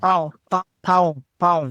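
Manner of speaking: pão pronounced nasally through the nose. Showing how to say the word for bread: nasal pronunciation of pão. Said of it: "you have to say it in your nose".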